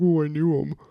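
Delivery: loud, tearful, weepy crying wail. Mocking a teacher who probably cried at an assembly: mock crying voice. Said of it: "Probably cried at the Terry Fox assembly".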